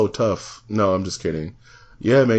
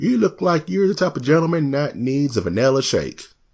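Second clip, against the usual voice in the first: nice high, light little twang in the voice; 5 semitones higher than usual. Retelling what the milkshake server said to a customer: imitating a woman's nice little twang. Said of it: "she had a nice little twang in her voice".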